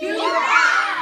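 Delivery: highest possible voice, very loud. Following the teacher's request to say the phrase, in the highest voice. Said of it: "say you rock in your highest voice".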